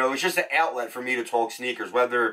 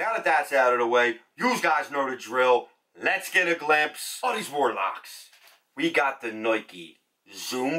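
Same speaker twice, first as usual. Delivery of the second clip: natural, everyday Philadelphia accent. After saying they're from philly, starting a sneaker video, in a philadelphia accent. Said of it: "one hundred percent authentic, hands down Philadelphia accent".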